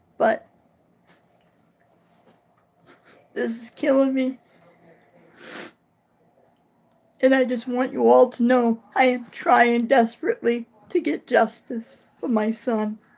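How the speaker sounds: weepy, tearful, close to tears. A parent tells everyone about seeking justice for a son; weepy. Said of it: "I'm sorry for being all weepy".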